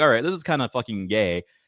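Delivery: ordinary talk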